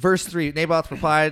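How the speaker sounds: ordinary delivery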